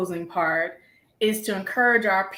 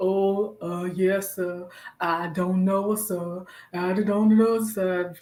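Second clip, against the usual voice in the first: very slow, sluggish, stretched-out dragging drawl. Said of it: "talking very slow".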